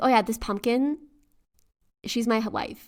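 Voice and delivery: ordinary talk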